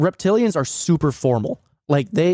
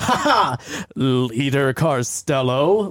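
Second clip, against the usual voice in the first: mock heavy sarcasm, mocking tone; 2 semitones lower than usual. Speaker recalling how someone always said a title: imitating a sarcastic tone. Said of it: "he would always use it in a very sarcastic tone".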